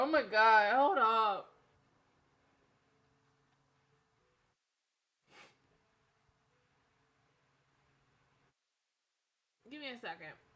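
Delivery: tearful, slowed speech while crying. Reacting to an episode, pausing to collect herself: crying while talking. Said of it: "I'm gonna go cry a little bit more".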